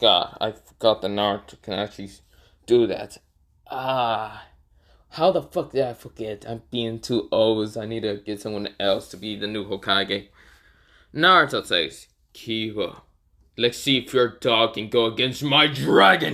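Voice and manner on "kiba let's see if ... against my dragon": put-on scary character voice. Voicing Naruto as he challenges Kiba, in a scary Naruto voice. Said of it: "Naruto says it in that voice because he wants to just scare the crap out of Kiba".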